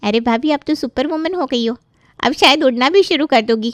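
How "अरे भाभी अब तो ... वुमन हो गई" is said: ordinary delivery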